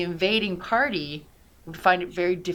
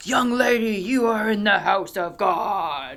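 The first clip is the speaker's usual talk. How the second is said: big, resounding, booming, drawn-out voice; 3 semitones higher, 3 dB louder than usual. Retelling a voice addressing her as she entered a church: booming voice. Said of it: "all of a sudden there's this booming voice".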